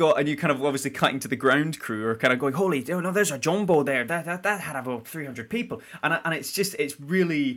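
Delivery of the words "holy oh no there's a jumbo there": practised, put-on Newfoundland accent. Describing a scene that cuts to the ground crew, in a put-on newfoundland accent. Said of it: "You've been practicing your accent".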